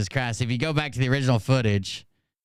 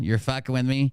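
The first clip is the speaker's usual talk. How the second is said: usual speaking voice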